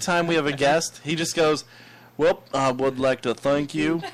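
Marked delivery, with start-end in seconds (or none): 2.2-4.0 put-on Southern accent, lower pitch. Imitating the guest who thanks the hosts every time, Southern accent. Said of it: "what is up with the Southern accent tonight?".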